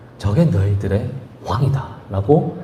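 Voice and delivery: low, slow, drawn-out sneering, taunting tone.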